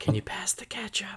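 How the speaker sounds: put-on hushed voice. Retelling asking for ketchup in Chicago: imitating hushed tones. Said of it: "I say that in hushed tones".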